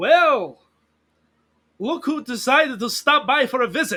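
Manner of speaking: boisterous, raucous, very loud call-out. Tolzes, Rosani's good friend, calls out from across the square: raucous call. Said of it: "call out to you raucously".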